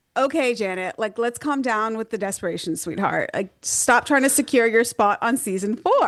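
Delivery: ordinary delivery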